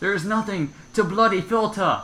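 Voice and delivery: strongly English-sounding accent. Podcast co-host told to filter the cussing replies in a suddenly very English accent. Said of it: "you just sound really English all of a sudden".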